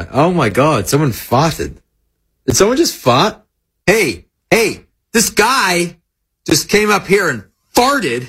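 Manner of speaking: put-on American accent. Acting out how americans say it, american accent impression. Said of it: "I like his American accent".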